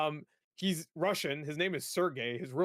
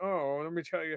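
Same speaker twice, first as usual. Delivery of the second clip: posh, polished, stock butler voice. Imitating the ai that talks to a game character, generic butler voice. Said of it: "he sounds like what like a generic butler guy".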